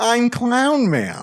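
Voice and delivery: put-on high, squeaky, annoying bratty child voice. Recalling a favourite from the episode, repeating its line: annoying Clown Man child voice. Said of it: "Clown Man has an annoying uh, child voice".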